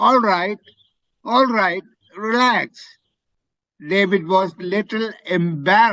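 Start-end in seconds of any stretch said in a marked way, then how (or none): 0.0-2.7 exclaimed, cried out with feeling, calming tone. Showing a student how to read a story line: cried out. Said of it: "you have to say it like that".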